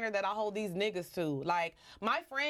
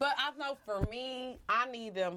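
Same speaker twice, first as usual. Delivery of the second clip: shaky, trembling voice wavering on the words; 3 semitones higher than usual. Speaker explaining what they need, with a shaking voice. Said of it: "why did my voice shake like that?".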